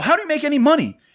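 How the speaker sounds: mock, shrill, very high yelling. Eric retells the question he asked on a phone call, retelling his own yell. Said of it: "Eric yells at people on the phone".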